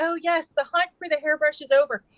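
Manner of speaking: excited, happy, exclaiming voice. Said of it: "I was so excited".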